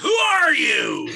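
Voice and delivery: put-on shrill, crabby, cranky old-timer yelling. Describing a meeting where a newcomer skips their name, imitating a crabby old-timer yelling. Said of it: "a crabby old timer who yells out".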